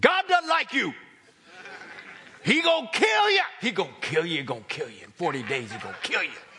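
loud voice, with plenty of attitude. Retelling how Jonah warned the city: Jonah saying it with attitude. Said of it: "Jonah said it like this".

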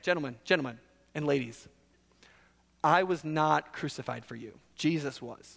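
put-on, heavy sarcastic delivery. Acting out a line from a passage while explaining it: acting sarcastic. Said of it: "I can't even say that without sarcasm".

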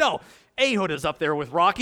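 ordinary talk

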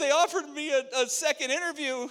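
put-on very high, tearful sobbing voice. Retelling how his wife answered on the phone: imitating wife crying. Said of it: "and then starts crying".

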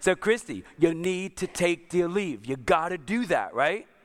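mock-frustrated, exasperated, emphatic, Italian-style manner. Acting out what the speaker told her earlier; mock-frustrated, Italian way. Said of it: "in a frustrated voice, and probably in my Italian way".

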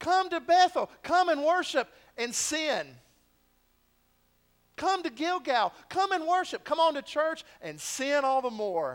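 loud mocking sarcasm. The speaker quotes the prophet's mocking call to worship, retelling the prophet's sarcasm. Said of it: "they are dripping with sarcasm".

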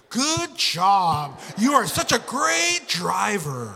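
as sarcastic as possible, very slow, sing-song. Clapping at a driver who cut her off in traffic: acted-out sarcastic praise. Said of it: "really sarcastic, as sarcastically as I can".

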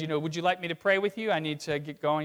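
ordinary delivery

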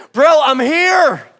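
play-acted, really loud, high shouted voice. Retelling an argument, the speaker quotes the other man's reply in a really loud voice. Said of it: "in a really loud voice".

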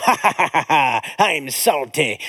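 low, very slow, drawling pirate voice. Retelling what a talking toy would say, in a pirate voice. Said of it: "he would do his pirate voice".

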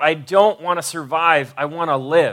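ordinary talk, nothing marked

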